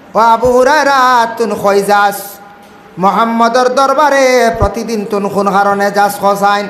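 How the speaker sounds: normal talking voice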